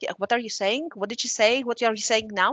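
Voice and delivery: normal talking voice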